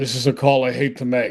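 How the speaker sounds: ordinary talk, nothing marked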